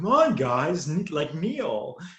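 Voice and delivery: drawn-out, slow, swooping sing-song delivery. Recreating a famous video's impression of Owen Wilson as Loki: Owen Wilson voice. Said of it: "a famous video of Tom Hiddleston doing an impression of Owen Wilson as Loki".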